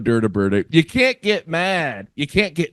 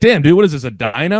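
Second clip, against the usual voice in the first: ordinary talk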